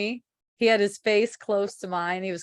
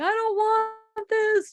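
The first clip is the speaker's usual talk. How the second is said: mock very high, drawn-out, tearful crying wail. Retelling a night of crying all the way home: imitating own past crying and screaming. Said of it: "screaming and crying".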